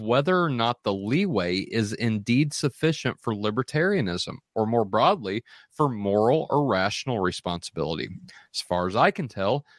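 plain

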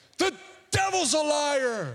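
blurted out with voice pushed up high. Retelling how Rusty reacts to a wrong food order: imitating Rusty yelling. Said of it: "he just yells out".

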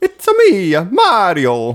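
very high, loud, drawn-out voice. Taking a turn after the others: Mario impression. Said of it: "That was a good one".

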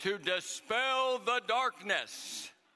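loud, clear, booming delivery. Retelling his preacher calling out from the audience, Jim Irby's loud booming call. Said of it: "loud, clear, kind of booming voice".

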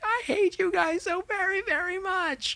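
very high, slowed, drawn-out, disgruntled outburst. Describing what to do about a party, the speaker acts out a mock disgruntled-employee meltdown. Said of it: "totally like lose it, like a disgruntled employee".

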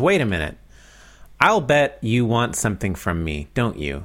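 usual speaking voice

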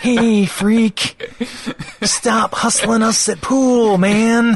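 bad impression, high, loud, slow sneer.

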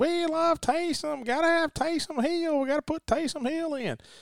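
put-on very high, Cajun-sounding South Mississippi accent. Imitating fans in the stands at a Saints game, in a Cajun-sounding accent. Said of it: "Was that your Cajun accent".

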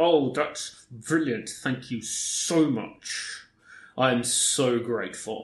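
acted, forced, slow, jaw clenched, through gritted teeth. Retelling how some people reacted to the found inconsistencies: retelling thanks through gritted teeth. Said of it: "people with gritted teeth who went".

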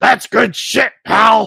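loud, rough, gravelly, raspy puppet voice yelling. Podcasters reenact the Firefly Funhouse match; give the Vince McMahon puppet yell. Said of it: "an impression ... of your reaction to Vince McMahon puppet yelling".

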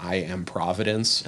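ordinary talk, nothing marked

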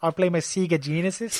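put-on, strong Australian accent. Imitating a game's australian bartender: imitating australian bartender's accent. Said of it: "do that Australian accent there".

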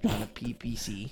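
speaking in a whisper. Whispering an aside to the person sitting right beside: whispering. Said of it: "How you gonna whisper to me right next to me?".

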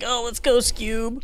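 very high, goofy slacker voice. Talking through a puzzle with a co-host, the speaker tries a line in Shaggy voice. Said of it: "I want to say that in a shaggy voice".

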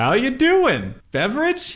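high, slow friendly bartender voice. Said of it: "a voice goes".

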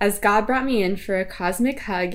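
plain

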